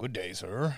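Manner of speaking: fantasy dwarf character voice. Telling coworkers about gaming, the speaker shows off a dwarven voice. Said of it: "I do I do dwarven voices".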